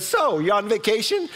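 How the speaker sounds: acted overly chirpy voice. Retelling what the lady seated beside them asked, imitating Betty's too-perky voice. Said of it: "In a way too perky voice".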